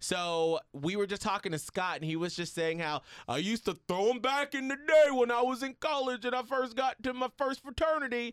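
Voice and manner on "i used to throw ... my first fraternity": put-on raised, loud, high-pitched New York accent. Recounting what a guest said on the podcast, the speaker sounds like a New Yorker Bill Cosby. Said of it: "He's like a New Yorker Bill Cosby".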